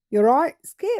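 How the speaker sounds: poor, failed attempt at an Australian accent. Talking to an audience about Skippy the bush kangaroo, in a bad Australian accent. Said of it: "I can't even do an Australian accent".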